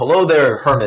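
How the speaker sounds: calling out loudly. Player's character greets a hermit from a distance, yelling a greeting. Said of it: "I'll yell like".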